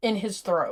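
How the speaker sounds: ordinary delivery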